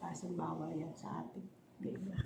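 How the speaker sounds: soft, unvoiced whisper.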